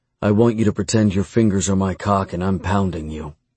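plain reading voice

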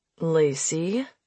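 low, quiet voice. Narrator reads a man saying the narrator's name in a warning voice. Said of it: "he said in a warning voice".

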